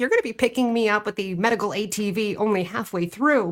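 ordinary talk, nothing marked

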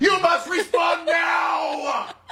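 high, slow, mock shouting scream. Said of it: "You scream on everything".

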